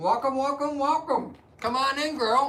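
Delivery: very high voice, speaking with mouth full. Welcoming someone by name to come on in, talking while eating nuts. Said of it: "I'm just eating some nuts".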